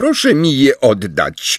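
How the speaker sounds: cold, frosty, icy, high-pitched voice. A girl demands her magazine back from a stammering classmate, in an icy tone. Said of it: "zażądała Luna lodowatym tonem".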